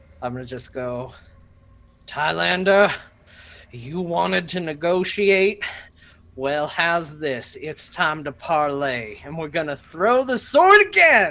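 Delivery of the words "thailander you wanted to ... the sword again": very loud, high voice forced through clenched teeth. A player's character addresses an opponent after a blow, through gritted teeth. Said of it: "through gritted teeth".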